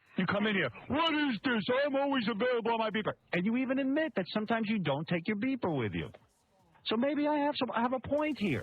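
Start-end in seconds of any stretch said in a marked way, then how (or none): 0.9-3.2 acted, indignant, angry, accusing yell. Retelling how the other speaker came in screaming: imitating someone yelling. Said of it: "It's not a reason to bail out and scream at me".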